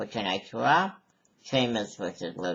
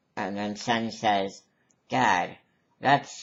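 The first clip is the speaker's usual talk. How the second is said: ordinary talk, nothing marked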